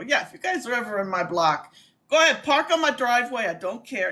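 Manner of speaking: put-on offhand, joking New York accent. Speaker retelling a joke made at a work meeting, New York accent. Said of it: "I've been doing the New York accent".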